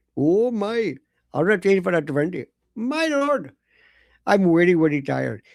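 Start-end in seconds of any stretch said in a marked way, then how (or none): 1.4-5.4 imitated Indian male accent. Retelling what an indian man said to the speaker: indian accent impression. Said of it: "it was an Indian fellow ... The V's and the W's".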